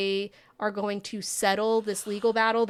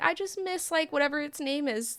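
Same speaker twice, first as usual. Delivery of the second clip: acted-out sobbing in a high, crying voice; 6 semitones higher than usual. Retelling a show scene where a character cries alone: imitating someone crying.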